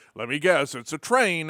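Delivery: ordinary delivery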